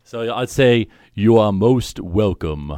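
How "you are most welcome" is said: slow, measured cadence and tone. Showing the line without the voice changer: Darth Vader cadence and tone. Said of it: "with that same kind of cadence and, you know, kind of tone".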